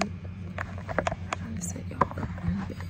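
whispered voice.

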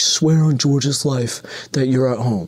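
mock small strained yell. Retelling what a man yelled at a woman while the friends hid laughing: retelling a guy yelling. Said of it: "he starts yelling".

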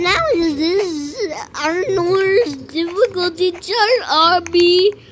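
high, slow, drawn-out goofy voice.

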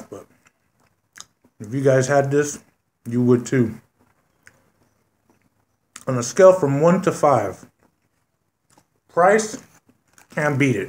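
speaking with food in mouth. Reviewing a burrito while still eating it: talking with food in mouth. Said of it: "talking with a lot of food in my mouth".

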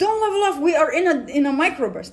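loud shout, hurled out. Retelling an instructor's warning during a climb: imitating someone yelling. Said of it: "yells at me".

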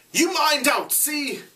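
very high-pitched, slow shout. Narrator voicing a character warning another at the entrance, shouting. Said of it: "Roger was shouting".

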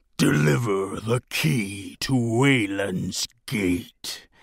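throaty, guttural, rasping growl. Narrator reads a giant creature confronting someone in a clearing, guttural rasping growl. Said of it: "he growled in a guttural rasp".

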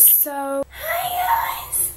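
lame voice, pitched way up and shouted.

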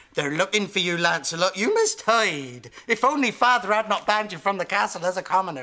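put-on rustic, rural country bumpkin accent. Practicing script lines, the speaker tries them in a country bumpkin accent. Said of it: "Country bumpkin".

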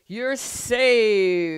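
mighty, booming, very loud, drawn-out roar. A large ox lumbering toward the musicians calls out to them, roaring. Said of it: "roared the ox".

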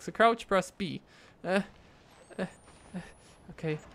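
nervous and reluctant. Playing a game they don't want to play, following the controls, scared. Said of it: "Why am I playing this game?".

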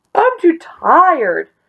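very high yell, yawned out. Narrator reads a tired weasel curled up in a corner, yelled with a yawn. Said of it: "he yelled with a yawn".

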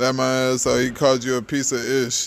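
ordinary delivery

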